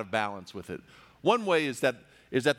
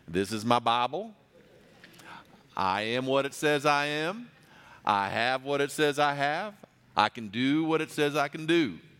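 put-on southern US accent. Imitating a megachurch pastor holding up his Bible, in a southern accent. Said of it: "you have to have kind of a southern accent".

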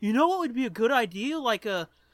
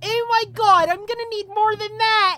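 shrill, very high, very loud woman's voice; 9 semitones higher, 8 dB louder than usual. Reading a story aloud, voicing the woman's lines: woman's voice. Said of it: "There's only one broad voice".

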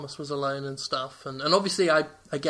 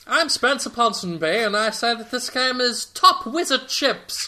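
put-on old-timey newsreel announcer voice; 8 semitones higher, 6 dB louder than usual. Two friends riffing about a game, one slips into an old-timey news reporter voice. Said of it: "It's like an old-timey news reporter".

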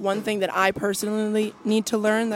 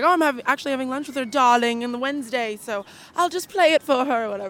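casual, relaxed speech in a put-on British accent; 4 semitones higher, 4 dB louder than usual. Quoting what a man told the speaker about a lunch, British accent. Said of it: "imagine this is a british accent".

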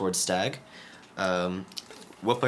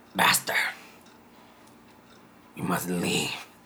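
rough, grating, very gravelly rasp. A game narrator voices a character in the scene: very gravelly voice. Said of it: "say in a very gravelly voice".

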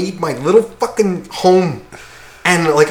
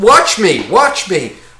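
put-on, show-off style yelling. Retelling a guy juggling a ball with his heels: imitating someone yelling. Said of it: "he's literally yelling".

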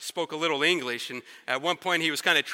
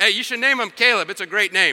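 imitated joking tone, much higher; 4 semitones higher, 6 dB louder than usual. Retelling what he said to a man as he was leaving, retelling a joking remark. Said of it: "I said it jokingly".

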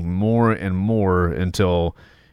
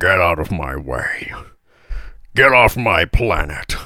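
put-on robot hero voice, lower pitch; 3 semitones lower than usual. Showing how they talk to the dogs at home: Optimus Prime voice. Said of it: "try to do, uh, Optimus Prime".

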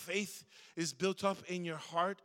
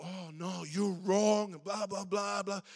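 put-on child voice, slow and defensive. Retelling a kid's reply to being called out: imitating a defensive kid. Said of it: "He was getting all defensive".

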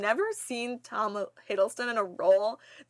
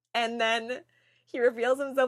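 ordinary talk

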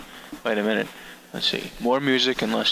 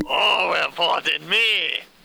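failed put-on French accent, higher; 6 semitones higher than usual. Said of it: "you're supposed to be French".

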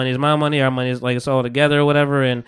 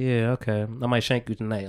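put-on quiet menacing voice, lower, quieter; 4 semitones lower, 10 dB quieter than usual. Retelling a quiet character's threat: imitating someone quietly threatening. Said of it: "he's quiet, and he's like".

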